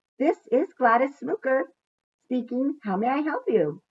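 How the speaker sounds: high, sugary, annoyingly too-sweet receptionist voice. A company employee answers Eugenia's phone call: Gladys Snooker's annoyingly sweet voice. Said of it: "said an annoyingly sweet voice".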